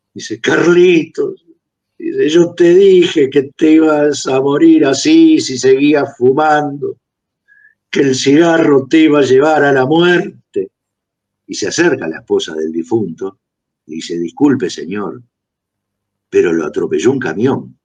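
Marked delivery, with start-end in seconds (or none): 2.3-10.7 mock distressed, anguished, grieving lament. Telling a joke, a mourner speaks to the dead man at the coffin, imitating an anguished voice. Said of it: "dice con voz angustiada".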